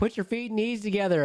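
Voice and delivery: high-pitched sergeant-style yelling.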